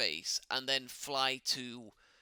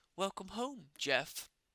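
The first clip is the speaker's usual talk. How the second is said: higher-pitched, artificial computer voice; 7 semitones higher than usual. Voicing the AI greeting the returning crew: voicing the AI. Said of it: "That's the A I".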